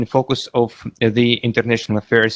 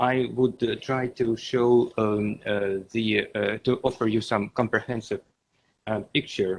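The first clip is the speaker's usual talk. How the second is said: very soft, quiet speech, barely audible. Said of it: "could you speak a little louder".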